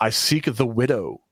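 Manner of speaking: ordinary talk, nothing marked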